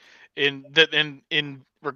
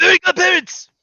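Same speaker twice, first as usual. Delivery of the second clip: loud, high screaming. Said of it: "just don't scream fairies".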